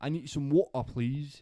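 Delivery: overdone mock London accent. Joking about picking up the local accent, in a mock British accent. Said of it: "I'll probably go crazy with the accent".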